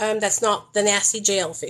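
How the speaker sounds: usual speaking voice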